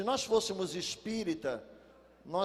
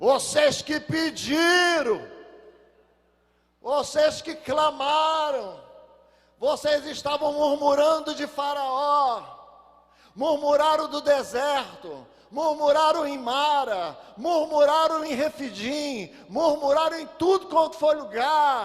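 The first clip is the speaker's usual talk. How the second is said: very loud, booming, thunderous voice; 7 semitones higher, 12 dB louder than usual. Addressing his brothers, the speaker imagines God answering them: God's thunder voice. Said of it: "aquela voz de trovão".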